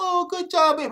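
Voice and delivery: all-nice, sweet, high motherly tone. Imitating a mother praising a toddler: imitating a mother being all nice. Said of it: "mama gotta be all nice".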